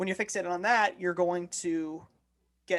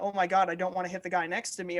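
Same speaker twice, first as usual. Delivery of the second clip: normal talking voice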